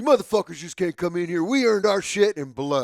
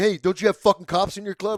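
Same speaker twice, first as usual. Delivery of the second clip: acted aggressive, pressing tone; 2 semitones higher than usual. Retelling hostile questions at a meeting: imitating aggressive questioning. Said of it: "They were very aggressive".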